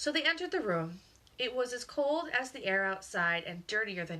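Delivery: ordinary delivery, nothing marked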